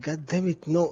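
mumbled, muttered under the breath. Voicing his character's reaction in the game, mumbling. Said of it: "Uten just mumbles like".

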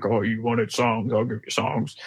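put-on low Western cowboy voice. Quoting what the cowboy voice says: cowboy voice. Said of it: "the cowboy voice being like".

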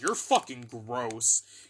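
play-acted sudden, sharp, snapped-out outburst. Retelling snapping at a friend over his food: imitating own angry outburst. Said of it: "I literally snapped".

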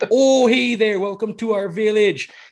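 loud, high-pitched put-on Minnesota accent. Joking about accents in a movie, greeting visitors to a village: put-on Minnesota accent.

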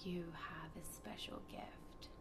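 soft, unvoiced whisper.

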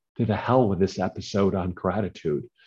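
usual speaking voice

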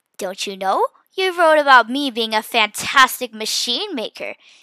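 ordinary delivery

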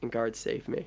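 whispered under breath. A character at the foot of a statue, whispering under her breath. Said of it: "she sort of whispers like".

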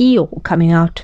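ordinary delivery

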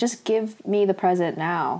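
ordinary talk, nothing marked

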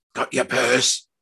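hushed, hissing whisper. Narrating the story, the reader voices the older man speaking to his son, hissed. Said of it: "the older man hissed".

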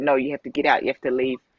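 ordinary talk, nothing marked

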